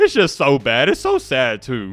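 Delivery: laughing through it, swooping pitch, slow. Reacting to a team's lopsided loss, laughing while talking. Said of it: "I'm sorry I'm laughing".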